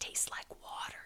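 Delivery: whispering. Rat, after sipping the soup with Armadillo, whispered. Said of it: "whispered Rat".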